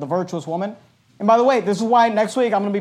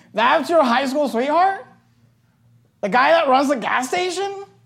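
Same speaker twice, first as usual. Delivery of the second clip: mock amused, high-pitched incredulous tone through laughter; 7 semitones higher than usual. Retelling George Bush's wife hearing about her high school sweetheart, imitating a woman laughing. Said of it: "she starts laughing and saying".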